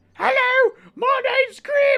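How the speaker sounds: very high-pitched, slow, drawn-out goblin voice. A player shows the voice of their goblin character from a weekly game, Grib goblin voice. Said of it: "my throat does kind of hurt because Grib's voice".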